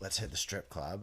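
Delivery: ordinary delivery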